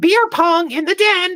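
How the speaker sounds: parrot-like voice.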